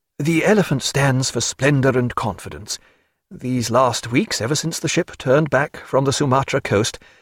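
ordinary delivery, nothing marked

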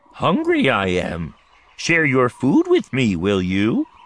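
put-on creature voice. Storyteller voicing a toad by the path, talking like the Dagobah creature. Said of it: "the toad talks like the creature on Dagobah".

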